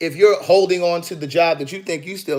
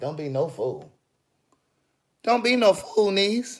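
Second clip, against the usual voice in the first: voice cracking and giving way; 2 semitones higher, 3 dB quieter than usual. Giving advice to your niece, voice cracking. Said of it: "that voice is cracking".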